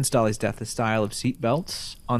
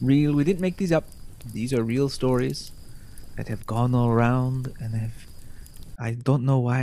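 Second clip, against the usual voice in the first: put-on French accent, faster. Podcast host opening spooky theme park stories, in a put-on French accent. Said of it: "now I'm just doing a French accent".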